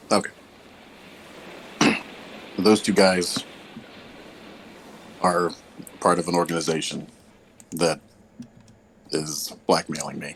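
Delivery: speaking with food in mouth, chewing. Answering a demand for an explanation, talking while chewing. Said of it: "I'm just chewing something real briefly".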